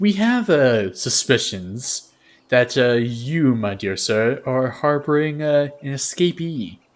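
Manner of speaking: slow, rather effeminate voice. A game master voices the captain of the guard questioning a dwarf, effeminate captain voice. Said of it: "you hear this like rather effeminate voice".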